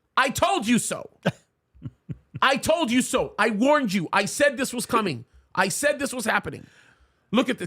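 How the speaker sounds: heated, riled-up, fired-up outburst. A host reading out a presidential order on air, fired up. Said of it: "Can you tell I'm a little fired up today?".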